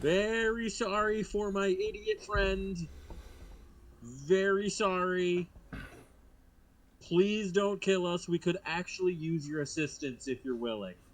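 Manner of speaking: high, loud yell, shouted all in one go. Playing Kismet, who sees a dragon turtle pulled out of the muck: yelling out. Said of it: "and just yell out".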